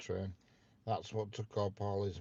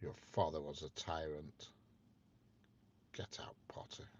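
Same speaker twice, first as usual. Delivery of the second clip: put-on stern teacher voice, lower and quieter; 3 semitones lower, 6 dB quieter than usual. Slipping back into a Professor Snape impression for a line: Professor Snape voice. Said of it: "the Professor Snape thing".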